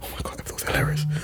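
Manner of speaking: soft, unvoiced whisper.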